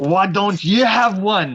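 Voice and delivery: aggressive put-on Scottish accent. Asking another player back: aggressive Scotsman from Samurai Jack voice. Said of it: "I was channeling the Scotsman from Samurai Jack".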